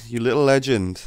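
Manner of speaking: ordinary delivery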